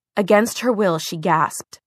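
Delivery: ordinary delivery, nothing marked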